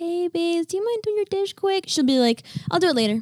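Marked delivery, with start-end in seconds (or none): 0.0-1.8 sweetest put-on high, sweet asking tone. Speaker acts out how she asks Baze to do a chore: put-on sweetest tone. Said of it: "I can say in the sweetest tone".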